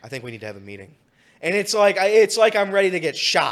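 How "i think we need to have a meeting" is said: very quiet, sorrowful, hushed half-whisper. Retelling how coworkers announce a meeting with a sad frown: imitating a sad half-whisper. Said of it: "they go and they whisper".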